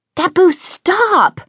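very high, shrill yell. Christine yells at her guide as the guide lunges at a merchant. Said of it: "Christine yelled".

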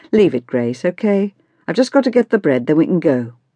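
plain

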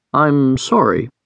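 with hesitation, halting. Told he is the only one standing there, a man apologizes: hesitant. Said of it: "he said with hesitation in his voice".

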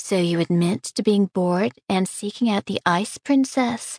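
plain reading voice

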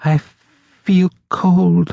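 very high, slow, drawn-out muttering. A narrator reads a woman who seemed not to hear the narrator, muttering slowly. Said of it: "she muttered slowly".

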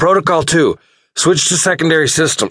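very high-pitched, choked, forced out through coughs. A narrator voices an admiral giving an order through toxic gas, choked out between coughs. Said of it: "malevolent reign admiral [name] raised his head from the tactical display and stared at the monstrous Mach 2 star killer that / malevolent reign admiral [name] raised his head from the tactical displa".

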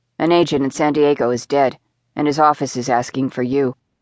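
ordinary delivery

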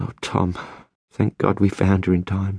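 murmured, murmuring. Isabel, held with the child in her husband Tom's arms: murmured. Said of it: "She murmured".

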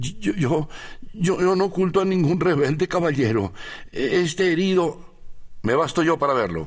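very high, quavering, trembling stammer. Señor Vine answers the captain searching his house, voice trembling. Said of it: "El señor Vine se alarmó ante aquella actitud y respondió con voz que temblaba".

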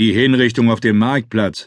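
plain

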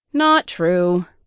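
offhand, dismissive tone. Angie contradicts the narrator about the wolf, dismissively.

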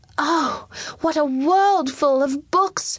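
high voice, exclaiming and crying out aloud. A young king, coming in before his bowing courtiers, crying out. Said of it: "when Lionel cried out".

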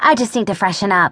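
usual speaking voice

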